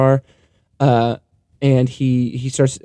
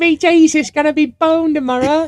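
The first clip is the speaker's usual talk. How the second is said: put-on child's stage voice, higher. Picturing the other speaker in a nativity play: imitating a child in a nativity play. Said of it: "I'm picturing you in a nativity play".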